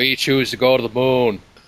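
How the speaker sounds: New England accent, done on purpose. Showing a JFK accent: JFK accent. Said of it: "the J F K accent, which I can do".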